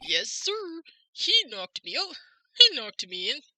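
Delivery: daffy, goofy, bouncy sing-song voice with swooping pitch. Playing a witness answering a judge in a courtroom scene: goofy Meekins voice. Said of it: "let's just switch it to my goofy voice".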